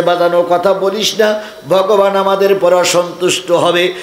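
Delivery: ordinary talk, nothing marked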